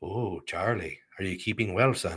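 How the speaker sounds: bad put-on Irish accent, low and soft. Retelling how people in ireland greeted his son, in a horrible irish accent. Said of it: "Horrible accent".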